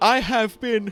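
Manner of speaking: words stretched through a yawn. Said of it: "sorry, yawning".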